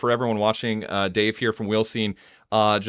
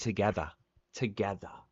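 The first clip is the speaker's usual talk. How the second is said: soft put-on English accent on "together"; 9 dB quieter than usual. Repeating a phrase stuck in his head from a video, imitating an English accent. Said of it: "that that's an interesting English accent".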